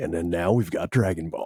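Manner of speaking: TV host show intro announcer delivery. Recalling how Tom introduced Dragon Ball on Toonami: Toonami Tom voice. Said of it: "linked with that Toonami Tom voice".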